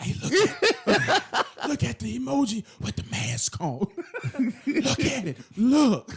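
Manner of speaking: very high, loud, carrying stage whisper. Imitating a friend who whispered too loudly: imitating Joe's loud whisper. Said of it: "Joe whispering so loud".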